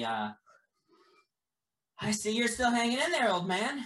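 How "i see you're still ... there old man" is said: voice pitched up high. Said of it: "and Joyce does say".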